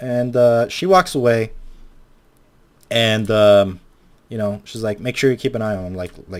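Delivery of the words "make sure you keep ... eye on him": plain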